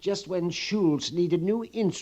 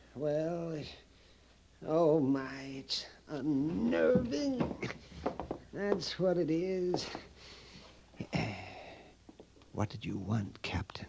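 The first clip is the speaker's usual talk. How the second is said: slow, hushed whisper under the breath; 7 dB quieter than usual. Hiding behind a barrel and answering the captain: whispering. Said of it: "What are you whispering about?".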